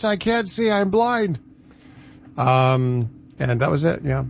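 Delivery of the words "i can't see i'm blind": high-pitched, nervous, panicking voice. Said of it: "my buddy Corey was like".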